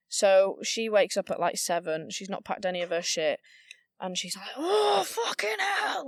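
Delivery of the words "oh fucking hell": very high-pitched scream, acted out. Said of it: "Just scre-".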